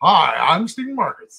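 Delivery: very loud, booming, put-on American accent. Retelling an audition, repeating his introduction: imitating own past american accent. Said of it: "When you start speaking with an American accent".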